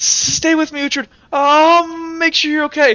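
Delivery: very high voice, weeping and crying through words. Voicing Kilroy holding his friend's frostbitten corpse: Kilroy crying. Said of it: "crying here".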